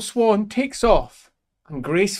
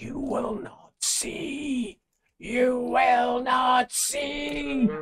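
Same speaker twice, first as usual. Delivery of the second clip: high, half-whispered demon voice; 6 semitones higher, 10 dB quieter than usual. As cracks split across its face, the demon speaks: demon half-whispering. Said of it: "cracks split across its face and whisper".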